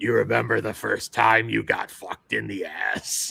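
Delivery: possessed-sounding, rasping, rough, creaky demonic croak. Retelling how a possessed man delivers a line, in demon voice. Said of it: "in demon voice".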